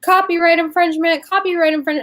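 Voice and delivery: mock high, repeated calling shout. Retelling someone at a convention booth: imitating someone shouting.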